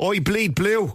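classic Dublin accent. Showing the others the typical dublin accent, in a typical dublin accent. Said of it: "the typical Dublin accent?".

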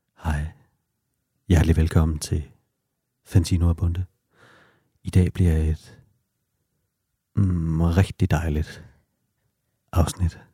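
put-on, fake seductive, sexy voice. Greeting imagined housewives listening, joking: put-on sexy voice. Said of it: "En sexet stemme".

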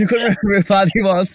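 high, loud mock outrage.

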